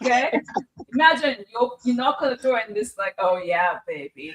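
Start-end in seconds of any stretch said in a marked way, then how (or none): 3.2-4.4 put-on leering, creepy, suggestive voice. Imitating another speaker opening the door on Halloween: imitating a creepy suggestive tone. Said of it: "it was this tone she, he uses".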